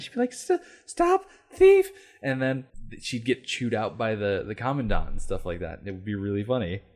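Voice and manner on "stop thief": put-on mousy voice, much higher and louder. Describing a Police Academy character trying to be intimidating, doing Laverne Hooks mousy voice. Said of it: "she had this mousy little voice".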